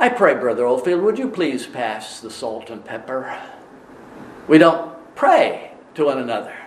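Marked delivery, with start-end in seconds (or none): 0.0-3.4 silly, jokey, put-on English accent. Joking about asking someone at table to pass the salt: silly put-on english accent. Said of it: "and in an English accent".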